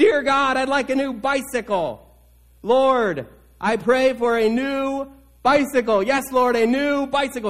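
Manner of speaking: mock, high, drawn-out shouting at the top of the lungs. Telling a story, voicing the youngest boy at the bedside, retelling a child shouting prayer. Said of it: "really at the top of his lungs".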